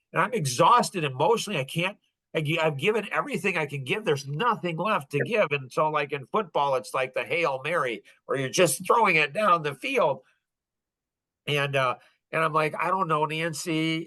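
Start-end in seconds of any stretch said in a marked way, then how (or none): 12.8-14.1 put-on crying, worn-out, slow, tearful pleading. Retelling a moment of helping Nancy, emotionally spent: retelling own tearful words. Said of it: "I'm crying".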